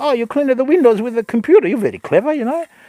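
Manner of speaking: very high, fast, put-on elderly Italian voice. Retelling answering a caller claiming to be from Windows, in a put-on old Italian voice. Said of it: "I just put on an old Italian voice".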